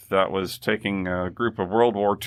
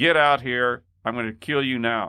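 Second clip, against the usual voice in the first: threatening, menacing shouting; 4 semitones higher than usual. Retelling a guard running out of the guardhouse: imitating a guard shouting. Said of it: "came running out of the guardhouse shouting".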